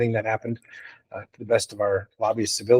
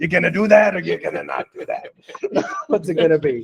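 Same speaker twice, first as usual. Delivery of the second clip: put-on old mafia grandpa drawl, pitched up; 7 semitones higher than usual. Retelling what Matt says every time the speaker calls, imitating Matt as old mafia grandpa. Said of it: "It sounds like an old mafia grandpa".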